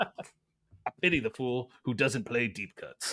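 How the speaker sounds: slow, deliberate, drawn-out delivery. Asked by another speaker to put on a Mister T voice: Mister T voice. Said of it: "put on your Mister T voice".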